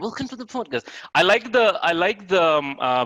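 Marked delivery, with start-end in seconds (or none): 0.0-0.9 soft, tight-teethed, royal-style posh British accent. Discussing British accents, demonstrating how the royals speak: posh, tight in the teeth. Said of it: "posh, the royals speak, so tight in the teeth".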